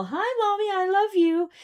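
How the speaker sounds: squeaky, very high little dog voice. Retelling the dog's trick of coming up sweetly: voicing the dog. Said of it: "he likes to pull this little".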